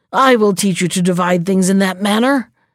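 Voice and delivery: ordinary delivery, nothing marked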